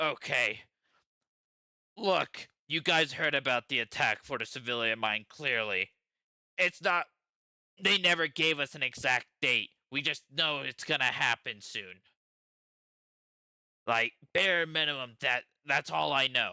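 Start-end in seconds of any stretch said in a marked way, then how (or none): 2.0-16.5 blunt, frank pirate grunt. The captured pirate looks at the players and tells what he knows, blunt pirate grunt. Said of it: "Um, he looks at you. / Look, I'm gonna be very, very blunt with you".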